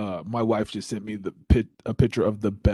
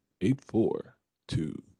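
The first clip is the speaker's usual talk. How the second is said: radio announcer voice, quieter; 3 dB quieter than usual. Reading out a number while setting up a live poll, in a radio voice. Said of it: "My radio voice".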